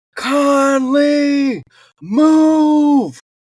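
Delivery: put-on, very high, frantic, terrified yell, stretched out. Retelling how a man yelled your name on the hill: retelling a fearful yell. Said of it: "I hear him yell".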